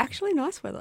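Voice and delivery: surprised. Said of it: "you sound so surprised".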